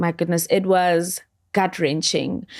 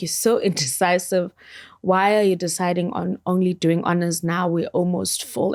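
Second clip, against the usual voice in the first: normal talking voice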